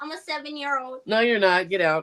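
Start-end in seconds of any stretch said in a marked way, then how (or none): 0.0-1.0 very high, soft, fake little-kid voice. Pretending to be his son who wants to say hi, put-on high voice. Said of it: "Talking with a high voice and everything".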